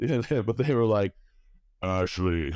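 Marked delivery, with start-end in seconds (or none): 1.8-2.6 acted laid-back regular guy voice. Retelling a vision, imitating the triple-faced gods as regular dudes. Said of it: "I'm gonna do my best impersonation of it".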